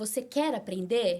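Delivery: very slow, careful, word by word. Retelling how the dentist spoke to help her understand: imitating someone speaking very slowly. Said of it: "foi falando bem devagar, bem devagarzinho pra eu entender".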